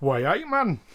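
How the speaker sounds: Geordie accent with Newcastle sound. Imagining a character saying a line: Geordie accent. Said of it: "as a Geordie, we'd never hear him say".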